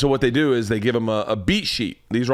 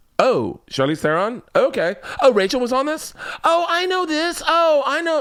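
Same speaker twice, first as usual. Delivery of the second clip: very high, slow, drawn-out put-on girl voice; 14 semitones higher than usual. Acting out someone reacting to a guest list: put-on girl voice. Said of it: "I'm making this girl voice".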